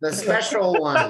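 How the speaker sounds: high, loud goblin god voice. In a tabletop game, a player speaks in character, in a goblin god voice. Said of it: "That's your best goblin voice".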